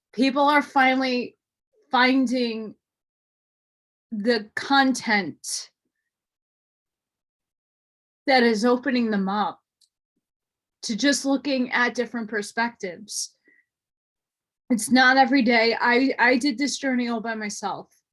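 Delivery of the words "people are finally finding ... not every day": choked-up, emotional, overcome with feeling. Thanking viewers for their messages of support, getting emotional. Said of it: "I'm gonna get emotional, I'm sorry".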